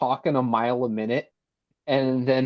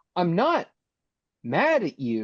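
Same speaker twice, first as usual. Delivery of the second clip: put-on very drawn-out, slow, swooping disappointed tone; 5 semitones higher than usual. Retelling a film character's words after being stabbed: imitating a disappointed tone. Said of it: "He's disappointed, basically".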